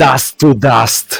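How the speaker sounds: piercing shout. Voicing the Duchess confronting an intruder at her masquerade: piercing shout. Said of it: "her voice pierces through the air".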